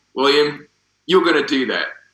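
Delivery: put-on New Zealand accent. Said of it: "it's gonna be my best New Zealand accent".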